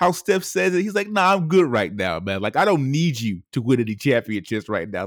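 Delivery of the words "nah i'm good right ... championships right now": usual speaking voice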